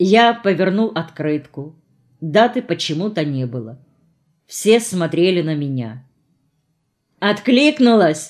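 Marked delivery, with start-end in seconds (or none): 7.2-8.3 scoffing, taunting, sneering, mocking tone. As everyone watches, a young man taunts the narrator about a postcard, mocking. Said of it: "насмешливо как-то поинтересовался Виталий".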